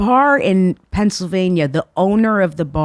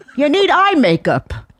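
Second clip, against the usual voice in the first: put-on old lady voice, pitched higher; 7 semitones higher than usual.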